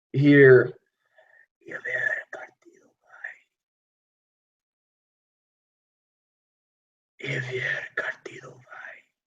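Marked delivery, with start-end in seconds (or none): 1.6-9.0 ghostly, eerie whisper, barely there. Voicing a voice that players hear whispered in the wind: whispered in the wind. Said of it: "Just whispered, whispered in the wind".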